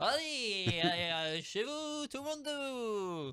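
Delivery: very slow, drawn-out, high put-on radio host hype. Trying to sound like a radio host after another speaker jokes about the job: put-on radio host voice. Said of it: "je sais pas faire, euh, animateur comme ça".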